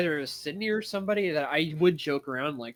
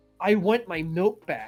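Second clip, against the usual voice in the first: mock eccentric, loud, raised, blurted-out yell; 2 semitones higher, 5 dB louder than usual. Retelling running up and grabbing someone by mistake: imitating own yell. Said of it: "and I yell".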